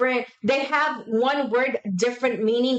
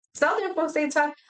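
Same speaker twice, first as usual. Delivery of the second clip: ordinary delivery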